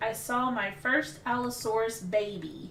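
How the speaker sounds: usual speaking voice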